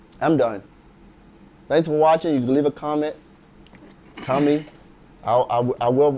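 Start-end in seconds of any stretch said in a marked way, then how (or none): 5.2-6.2 stuttering, louder and much slower. Ending a video and inviting viewers to comment, stuttering. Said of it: "I'm stuttering".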